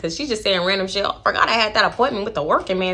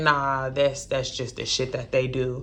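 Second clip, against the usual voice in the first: very low, soft, dragged-out slow-motion drawl; 8 semitones lower, 6 dB quieter than usual. Retelling a conversation, the speaker imitates a guy's answer, talking in slow motion. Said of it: "dude is talking in slow motion".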